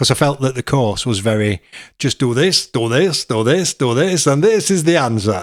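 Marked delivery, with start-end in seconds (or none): 2.0-5.4 fake, put-on Italian accent. Quoting how the course felt to them, in a put-on italian accent. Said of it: "Why have you done that in an accent?".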